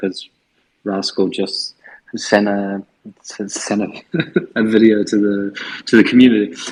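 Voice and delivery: talking through stifled laughter, stumbling words. Explaining that a video was just sent to the community, trying not to laugh. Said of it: "I'm trying not to laugh".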